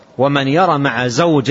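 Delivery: plain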